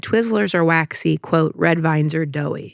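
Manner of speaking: ordinary talk, nothing marked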